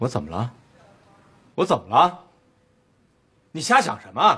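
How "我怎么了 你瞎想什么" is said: emphatic, high, swooping, rising mild yell. In a drama, a character being scolded fires back; shouting. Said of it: "你喊什么喊？".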